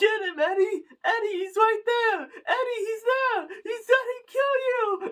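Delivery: put-on very high, shrill, frantic panicked yelling. Retelling a movie scene where a character watches Eddie get choked: imitating panicked yelling. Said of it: "people don't act in sensible ways when they're panicking".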